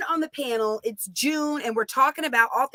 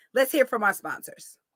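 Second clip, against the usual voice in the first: plain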